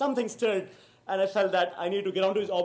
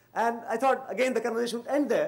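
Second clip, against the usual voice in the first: ordinary delivery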